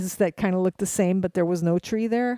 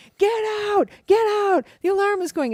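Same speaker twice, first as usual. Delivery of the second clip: put-on shrill alarmed screaming; 13 semitones higher, 3 dB louder than usual. Retelling how a friend at the door screamed a warning: imitating someone screaming. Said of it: "he's screaming".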